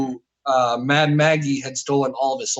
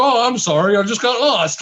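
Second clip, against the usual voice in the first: jokey, high, put-on Canadian accent; 8 semitones higher than usual. Retelling a line from a player who was playing a Canadian: imitating a Canadian accent. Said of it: "he was playing, like, this Canadian".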